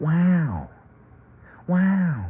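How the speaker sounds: wow hit at a very high pitch. Speaker jokes about an actor's nickname, doing an Owen Wilson 'wow' impression. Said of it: "That's how Owen Wilson always sounds".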